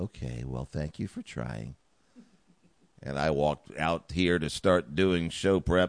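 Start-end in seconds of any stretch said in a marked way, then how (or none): 0.0-1.7 lovely, sugary, sweet and polite voice. Retelling the other person's polite reply: imitating Mystery Woman's sweet voice. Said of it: "in her very lovely and sweet way".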